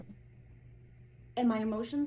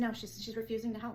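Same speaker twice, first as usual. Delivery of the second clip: ordinary delivery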